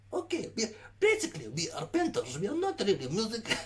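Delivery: Russian-Ukrainian accent. Chatting with another person about their group, drifting into a Russian-Ukrainian accent. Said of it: "I'm kind of going into a Russian Ukrainian accent".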